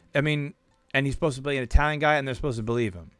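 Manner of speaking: ordinary talk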